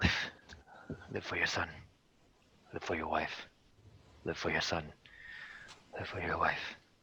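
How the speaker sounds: panicky, scared, rushed whisper under the breath. Voicing a character muttering under his breath to calm himself: scared, panicked muttering. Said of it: "a scared, panic sort of voice".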